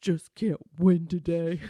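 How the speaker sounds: imitated muttering under the breath. Retelling a wing leader's remark to himself: imitating muttering under breath. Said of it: "under his breath".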